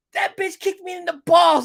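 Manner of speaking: put-on drunken, complaining voice, very high-pitched. Retelling a movie scene, quoting a character in a high-pitched voice. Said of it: "he's like the high pitched voice".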